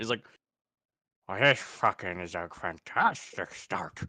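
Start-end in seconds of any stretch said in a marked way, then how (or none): 1.3-4.0 soft, slow mumble as through a mouthful of dirt. Retelling how he picks his head up off the ground, imitating a mouth full of dirt. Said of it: "he's got like a mouthful of dirt".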